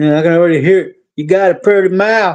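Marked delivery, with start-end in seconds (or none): 1.2-2.3 fake accent of a prison inmate. Joking with a co-host about what prison inmates will say; put-on prison inmate accent. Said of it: "I hope I got the accent right".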